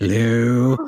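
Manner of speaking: eerie, creepy robot voice. Imitating the creepy face robot greeting the group: imitating the creepy face robot. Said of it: "he's all like".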